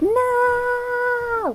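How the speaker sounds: anguished, very high-pitched, strained cry.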